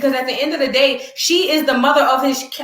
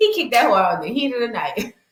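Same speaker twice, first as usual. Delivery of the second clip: speaking while laughing through the words; 3 semitones lower than usual. Ranting about being kicked out at night: laughing while talking. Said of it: "Why am I laughing?".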